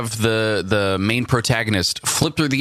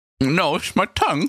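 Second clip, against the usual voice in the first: high voice, talking through a mouthful while chewing; 8 semitones higher than usual. Someone asks if he's eating something; talking with mouth full. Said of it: "you eating something?".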